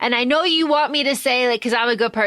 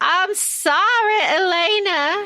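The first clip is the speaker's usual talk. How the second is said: heavy Southern drawl, pleading, a name drawn out; 7 semitones higher than usual. Quoting a man apologizing to a woman, in a thick Southern accent. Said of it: "he's got a real thick Southern accent".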